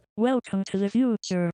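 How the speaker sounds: put-on old robotic synthetic computer voice. Explaining how AI voices have changed, demonstrating an old computer voice. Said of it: "a computer voice that sounds like this".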